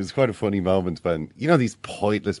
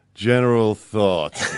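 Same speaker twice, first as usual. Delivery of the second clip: put-on, withering, sarcastic voice; 4 dB louder than usual. Retelling a manager's reply to a pre-match interview question: imitating Louis van Gaal's withering sarcasm. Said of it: "it was just withering sarcasm".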